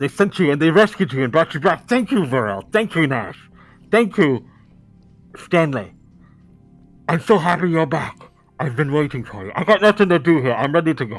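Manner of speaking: voice without lips, drooling. Voicing a lipless character while drool drips: voice without lips, drooling. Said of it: "it's happening to me".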